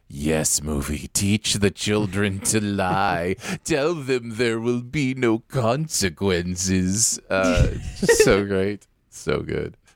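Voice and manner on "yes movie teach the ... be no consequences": devilish, demonic satanic voice with drawn-out words. Recounting what he says, doing an almost satanic voice. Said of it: "the almost like satanic voice".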